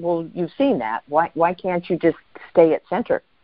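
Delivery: ordinary talk, nothing marked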